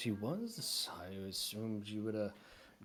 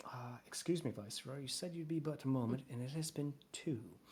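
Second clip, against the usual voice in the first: stately half-elf character voice; 3 semitones higher than usual. Voicing a half-elf who pokes her head in: Miss Adams voice. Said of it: "attractive half-elf poke her head and says".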